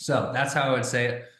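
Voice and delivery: ordinary talk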